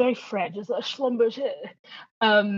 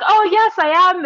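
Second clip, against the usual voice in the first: uncertain put-on English accent, high, drawn out; 10 semitones higher, 9 dB louder than usual. Retelling an Englishman's reply: attempted English accent. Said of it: "I don't know what accent that was".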